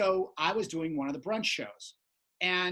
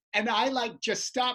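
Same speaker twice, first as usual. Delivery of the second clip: ordinary talk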